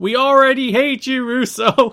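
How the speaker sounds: very loud, very high top-of-lungs yelling. Recalling a guy in the crowd answering russo, retelling a crowd member's shout. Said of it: "shout at the top of his lungs".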